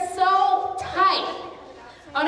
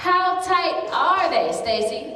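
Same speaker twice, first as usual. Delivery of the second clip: ordinary talk, nothing marked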